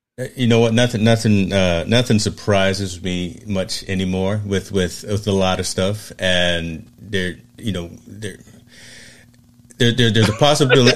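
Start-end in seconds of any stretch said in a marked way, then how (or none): 6.2-11.0 stammering, stuttering speech. Answering a question about sudden accusations, stammering. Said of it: "I'm stammering".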